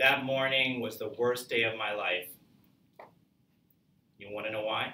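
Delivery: suspense-building dramatic pause. Explaining good pauses with a suspense example: dramatic pause before 'you want to know why'. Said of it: "That's building suspense. That's a good pause".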